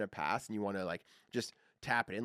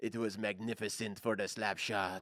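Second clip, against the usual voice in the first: slow, put-on French accent. Retelling what a hockey player explained: imitating Bellemare's French accent. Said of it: "he's got a French accent, so when he explains".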